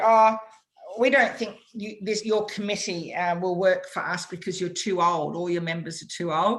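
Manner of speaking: ordinary talk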